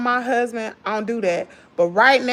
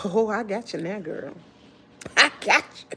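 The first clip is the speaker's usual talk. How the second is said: devilish, tempter-like devil character voice; 2 semitones lower, 4 dB quieter than usual. Retelling how the devil stepped in: voicing the devil. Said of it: "That devil stepped in and he said".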